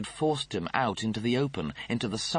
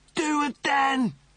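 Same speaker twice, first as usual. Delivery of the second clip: very high, loud scream; 5 dB louder than usual. A man blasted across mounds of burning garbage: screaming. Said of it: "Lister screamed".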